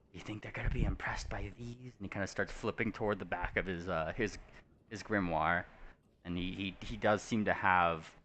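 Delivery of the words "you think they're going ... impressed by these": confiding, hushed, half-whispered stage whisper. Voicing a character nudging a companion and half-whispering to them: half-whispering in character. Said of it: "starts kind of whispering to you".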